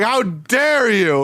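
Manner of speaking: put-on, all-out yelling, screaming. Recapping a cartoon episode, the speaker acts out a character, imitating someone screaming. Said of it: "because he's screaming at him".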